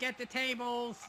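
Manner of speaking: ordinary delivery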